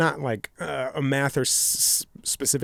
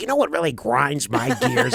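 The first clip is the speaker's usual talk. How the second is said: put-on old-man character voice; 4 dB louder than usual. Describing an old guy, then doing his line: Andy Rooney impression. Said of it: "That's Andy Rooney".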